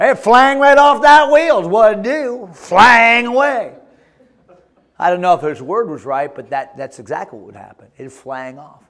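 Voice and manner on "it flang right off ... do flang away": put-on Southern US accent, higher and louder. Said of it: "they speak like Southerners".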